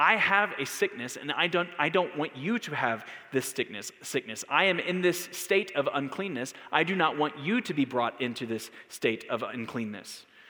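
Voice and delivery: ordinary talk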